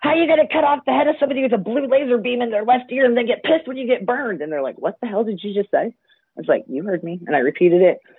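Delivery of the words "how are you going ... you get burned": play-acted, all-out, high, raised screaming. The speaker reenacts screaming at a man, retelling a scream. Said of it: "I screamed at him like".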